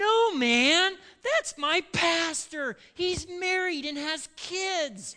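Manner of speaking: loud, very high bellowed blurt. Retelling how the person sitting beside the speaker cut in, retelling a bellow. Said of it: "immediately bellows".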